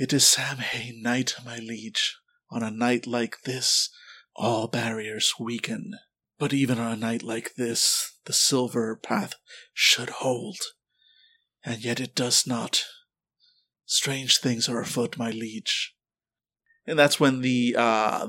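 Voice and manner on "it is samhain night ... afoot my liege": gentle, soft, hushed half-whisper that carries. Voicing a seer who answers her liege: soft half-whisper. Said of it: "in a soft whisper".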